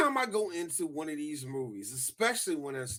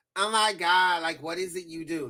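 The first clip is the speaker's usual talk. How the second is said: put-on woman voice, louder; 5 dB louder than usual. Retelling a scene from a show, imitating a woman's voice. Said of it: "now the voice I just used right there".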